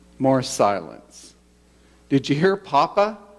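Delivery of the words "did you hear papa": put-on voice, a bit irritated, mildly annoyed. Retelling a grandfather asking the grandson a question: imitating a bit irritated grandfather. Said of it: "a bit irritated".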